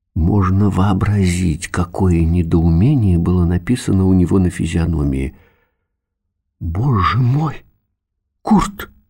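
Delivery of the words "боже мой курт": scared, startled cry of alarm. Mother sees the father suddenly shrunk to half his height, frightened exclamation. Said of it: "испуганно воскликнула мама".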